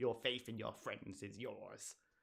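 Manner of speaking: terrible, soft, hushed, sinister evil emperor voice. Retelling a fellow player's line during a Star Wars Destiny game: Palpatine impression. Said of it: "just in his best Palpatine impression".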